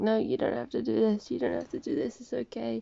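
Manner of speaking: put-on screaming with a rough edge. Retelling a story, the speaker voices the paladin: imitating someone screaming. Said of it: "the guy paladin was just screaming like".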